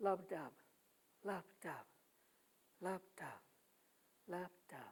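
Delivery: heartbeat-like lub dub, fading.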